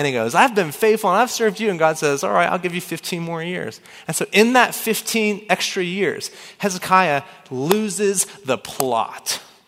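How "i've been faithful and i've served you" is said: higher-pitched, whiny, pleading complaint. Retelling the Bible story of Hezekiah pleading with God, imitating Hezekiah whining. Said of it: "Hezekiah starts whining".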